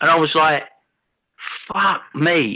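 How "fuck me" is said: stunned, jaw-dropped, shocked disbelief. Retelling own reaction to a partner's strange act: imitating own shocked reaction. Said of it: "It's like a state of shock".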